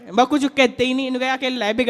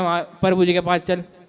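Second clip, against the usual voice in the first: usual speaking voice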